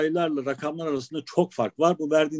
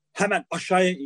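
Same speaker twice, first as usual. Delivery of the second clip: mock harsh, stern-sounding put-on voice; 3 semitones higher than usual. Recounting a man's reaction after seeing his license, retelling a harsh order. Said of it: "böyle sert bir sesle".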